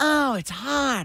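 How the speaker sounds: put-on whiny complaining. Imitating the others walking in and complaining: imitating whiny complaining. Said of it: "but you guys walk in and go".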